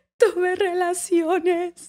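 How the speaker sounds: put-on high, tearful, sobbing, weeping voice. Re-enacting her past self answering him in Spanish, retelling her sobbing. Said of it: "I'm like literally sobbing".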